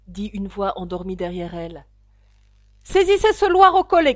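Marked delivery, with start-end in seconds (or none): 2.8-4.1 loud shouting. Reading the queen's outburst in court, shouting. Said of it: "cria la reine".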